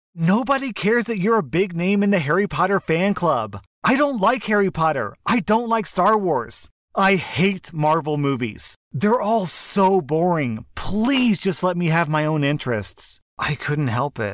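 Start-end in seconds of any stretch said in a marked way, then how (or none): 0.2-13.2 put-on, high, frustrated, fed-up bursting-out yell. Retelling yelling at mom about her fandom: imitating own yell. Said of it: "just yelled".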